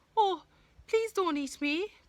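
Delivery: very high, pleading, begging goat voice. Reading a fairy tale aloud, the second billy goat pleads with the troll. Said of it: "pleaded the second billy goat".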